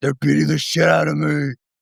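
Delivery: rough, scraped-out, creaky superhero voice. Joining in mocking Batman calling for help: Batman voice. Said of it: "He's like, "Catwoman, help!"".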